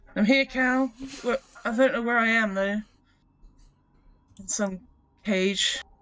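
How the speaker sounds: loud, high calling out across a distance. Hearing a voice call for help, a character replies with loud calling out.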